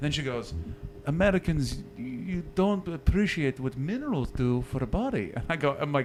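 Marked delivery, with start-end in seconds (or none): 1.1-5.3 clumsy, bad attempt at a German accent. Retelling what a woman said to her about americans, in a bad german accent. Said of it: "I can't do a German accent".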